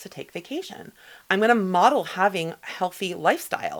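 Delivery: ordinary delivery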